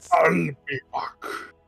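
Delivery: hammy, put-on celebrity character voice. Joining in the movie-line impressions on a call: Arnold Schwarzenegger voice. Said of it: "impression I know how to do of Arnold Schwarzenegger".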